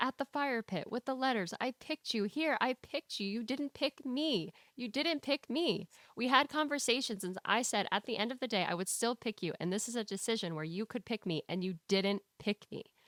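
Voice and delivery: ordinary talk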